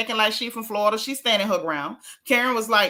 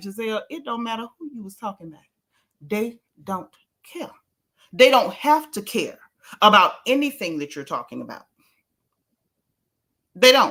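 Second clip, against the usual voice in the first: ordinary talk, nothing marked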